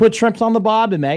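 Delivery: clumsy put-on Aussie twang, high and loud. Taking turns at Australian accents, a bad Australian accent. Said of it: "I do a better Australian than you do".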